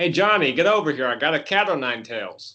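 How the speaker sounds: fatherly dad voice, calling out. Continuing the imagined dad calling a kid over: imitating a dad calling a kid over. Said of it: "imagine coming home and your dad's like".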